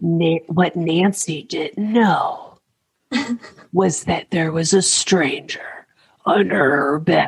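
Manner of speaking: sultry, seductive, suggestive narrator voice. Mocking the voice used to try to get you turned on, seductive narrator voice. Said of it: "They always have this voice that's like".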